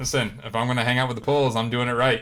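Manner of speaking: usual speaking voice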